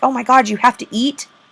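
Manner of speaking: open, mock sarcastic put-on voice. Acting out a business's view of worker lunch breaks: put-on sarcasm. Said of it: "There's sarcasm in that".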